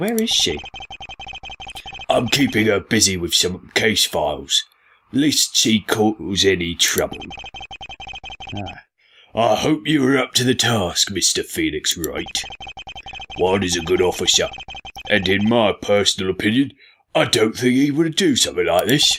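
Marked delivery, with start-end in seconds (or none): 2.1-19.2 put-on Cockney accent, laid on thick. Playing the police chief speaking to the defense lawyer, in a Cockney Batman voice. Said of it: "Maybe I shouldn't have chosen this voice".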